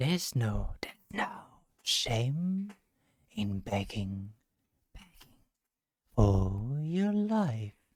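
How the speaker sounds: many voices together. Voicing a masked figure in a tabletop game: many voices speaking together. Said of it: "voices speaking all together".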